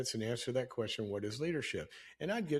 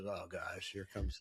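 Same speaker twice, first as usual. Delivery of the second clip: put-on exasperated groan, lower and quieter; 5 semitones lower, 5 dB quieter than usual. Retelling a daughter reacting to a whiteboard lesson: imitating an exasperated eye-roll. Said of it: "she rolls her eyes and goes".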